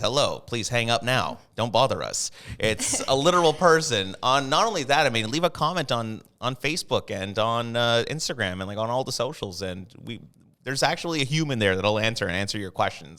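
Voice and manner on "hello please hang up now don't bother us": robotic, machine-like automated recorded voice. Speaker saying a real person answers their phone, not a robotic phone voice. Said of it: "It's not a robotic voice that says".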